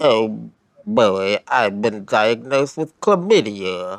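downcast, sad cartoon hound voice. Describing a game's prime minister character, doing a Droopy Dog voice. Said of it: "Sexually active Droopy Dog".

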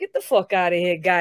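put-on Rhode Island accent coming through in speech. Quoting how one talks to one's own people, in a Rhode Island accent. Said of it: "My Rhode Island comes out".

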